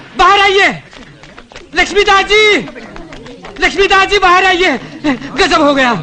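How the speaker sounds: shouting. Calling for someone to come outside, shouting. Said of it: "इतना चिल्ला क्यों रहा है तू?".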